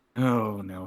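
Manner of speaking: very distressed, pained groan. Voicing a character who opens his eyes and stares at the floor: very distressed groan. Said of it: "That sounded like a very distressed groan".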